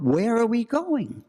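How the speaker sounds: mock shrill cry, pitched very high, screamed. Retelling his wife's question at the ravine edge: imitating a scream. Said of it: "my wife screamed out".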